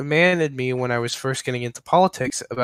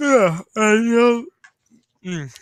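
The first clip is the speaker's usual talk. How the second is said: words spoken mid-yawn, voice very high; 10 semitones higher, 4 dB louder than usual. Tired listener replying to a conversation partner late in the evening, while yawning. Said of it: "sorry, I'm I'm yawning".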